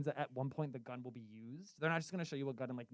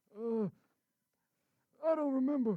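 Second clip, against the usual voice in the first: put-on old man voice, higher and louder; 10 semitones higher, 5 dB louder than usual. Playing Grandpa on a radio bit, asked what year it is, in an old man impression. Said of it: "my old man impression".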